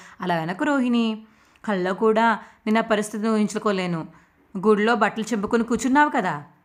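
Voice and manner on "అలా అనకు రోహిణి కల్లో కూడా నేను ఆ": usual speaking voice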